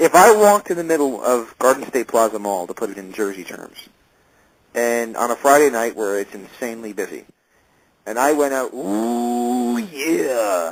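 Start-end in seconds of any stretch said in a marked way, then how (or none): 8.7-10.7 wrestler's catchphrase voice, like a ring promo. Picturing calling out in a busy mall: Macho Man Randy Savage voice. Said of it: "that's the Macho Man voice".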